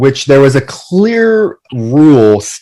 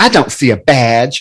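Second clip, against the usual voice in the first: put-on sassy voice with a lisp. Imitating a man sassing back at authority, in a put-on sassy lispy voice. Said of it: "he has such like a lispy sound to his voice".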